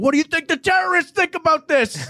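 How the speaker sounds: shrill scream, pitched very high. Recounting a man screaming after Army failed to cover the spread, imitating his scream. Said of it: "he was just screaming".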